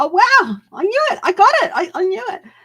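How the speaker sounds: mock, very high, loud, surprised delight. Acting out own reaction when a prediction comes true: imitating own surprised delight. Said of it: "I get really surprised when I see something and it's like".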